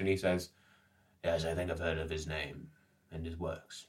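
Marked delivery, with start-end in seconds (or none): 1.2-3.9 low, soft, distant, faraway murmur. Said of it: "His eyes grow distant for a moment".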